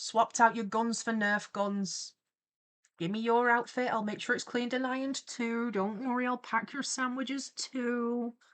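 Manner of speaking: plain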